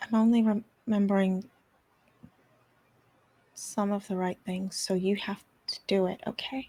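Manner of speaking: softly spoken, quiet, hushed tone. Speaking to someone you have not been this nice to in eight years, use a soft voice. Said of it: "this soft voice is really throwing me off".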